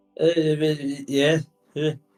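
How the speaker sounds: put-on high, drawn-out tipsy drunk voice with yeah stretched. Answering a hooded stranger who asks 'Are you Edith?', in a drunk voice. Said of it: "That's sort of a drunk".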